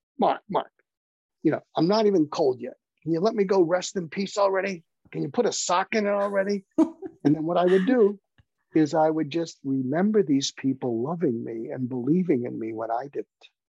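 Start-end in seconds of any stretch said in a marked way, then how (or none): 0.2-6.7 put-on pitched-up New York accent. Retelling what a man would tell him after being asked for advice, in a new york accent. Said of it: "he had this New York accent".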